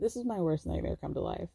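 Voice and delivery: soft, hushed whisper under the breath. Retelling what someone said quietly during a fitting: imitating someone whispering. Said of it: "Daniel whispers".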